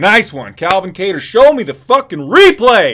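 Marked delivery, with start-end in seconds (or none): 1.2-2.9 loud, high, drawn-out yell with big pitch swings. Demanding to see the replay of a fight: yelling. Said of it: "Sorry for yelling".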